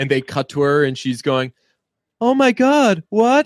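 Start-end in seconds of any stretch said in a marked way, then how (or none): 2.2-3.5 very high, slow, drawn-out, quavering worried voice. Retelling a movie character's reaction: imitating a shaky concerned voice. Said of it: "her voice is, like, shaky".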